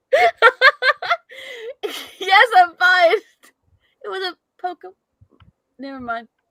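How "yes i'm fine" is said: blurted out high and loud while cracking up. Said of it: "You all right?".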